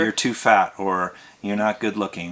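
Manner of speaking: ordinary delivery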